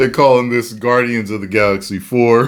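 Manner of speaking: laughing while talking.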